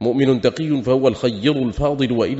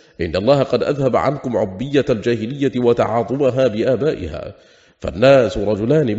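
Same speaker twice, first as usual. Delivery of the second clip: plain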